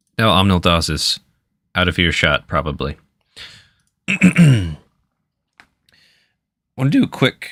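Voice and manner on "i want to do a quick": voice cracking and jumping up mid-phrase. Breaking from the story to check in with the group, voice cracking. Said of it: "my voice cracked".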